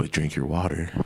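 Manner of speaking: soft, low-toned, calm voice. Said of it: "he'll say some bullshit like".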